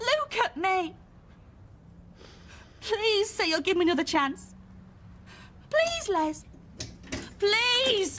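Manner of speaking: high, pleading, begging voice. A character speaks to les, who says it's too late, begging. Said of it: "I'm begging you".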